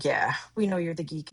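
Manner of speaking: normal talking voice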